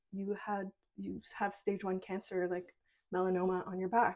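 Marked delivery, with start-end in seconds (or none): none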